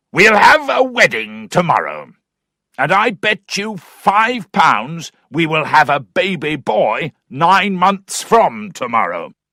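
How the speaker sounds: loud hollering shout. Narrator reads Mr. Weston calling to his neighbour Mr. Allworthy, Mr. Weston shouting. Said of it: "[name] joined them. / and with his hunting voice cried out".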